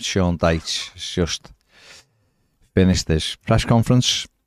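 deflated, unhappy voice.

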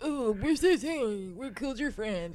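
mocking, put-on voice poking fun. Speaker putting on a voice to make fun of people: put-on mocking voice. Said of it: "when I did that voice making fun of people".

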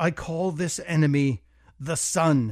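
plain

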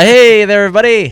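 very loud, very high scream. Opening the podcast by greeting everybody, screaming greeting. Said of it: "Don't scream".

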